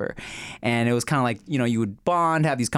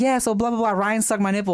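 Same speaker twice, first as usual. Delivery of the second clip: loud, high, chatty, projected voice; 10 semitones higher than usual. Retelling a girl at fifteen telling a private story, imitating her talking loud. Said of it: "but she's talking loud".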